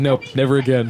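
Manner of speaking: ordinary talk, nothing marked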